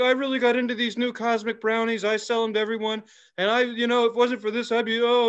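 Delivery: mock-crying, fake tearful voice. The speaker mocks people who cry when talking about a product, imitating someone crying. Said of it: "I'm just crying".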